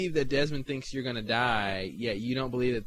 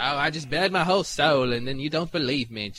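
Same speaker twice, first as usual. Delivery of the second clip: wrong, bad put-on English accent, higher; 3 semitones higher, 5 dB louder than usual. Acting out a character's line while talking with a friend, in a wrong english accent. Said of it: "that's the wrong English accent".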